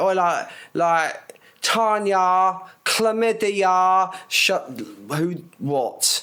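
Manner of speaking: put-on high, very slow, stretched-out girl's drawl. Retelling what a girl on the bus said: imitating a girl on the bus. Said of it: "you can hear it as well, like".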